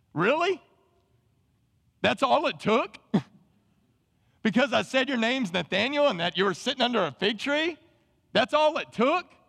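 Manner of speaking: high, incredulous, borderline sarcastic tone. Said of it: "Jesus is almost being borderline sarcastic".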